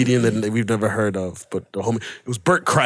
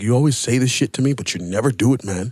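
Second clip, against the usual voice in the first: ordinary talk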